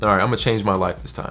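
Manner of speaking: ordinary talk, nothing marked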